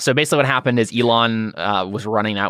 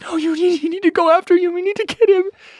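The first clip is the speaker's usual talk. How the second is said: put-on hysterical sobbing, much higher pitch; 3 dB louder than usual. Describing a sobbing woman urging them to go after him, imitating hysterical crying. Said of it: "and it seems hysterical".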